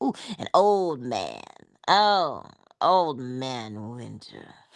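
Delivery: put-on swooping, sing-song delivery on "old man". Musing about loving winter, doing Jackée Harry saying old man. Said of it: "you gotta say old man like Jackie Harry. She goes".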